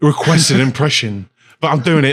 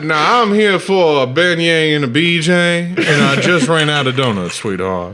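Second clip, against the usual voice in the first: shoddy, bad fake Southern accent; 3 semitones higher than usual. Joking with friends about ordering beignets, in a shitty fake Southern accent. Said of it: "shitty Southern accent".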